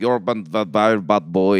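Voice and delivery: very slow, loud, put-on Russian woman's accent. Retelling how a woman in a video talks: imitating a russian accent. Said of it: "it really turns me off to hear her".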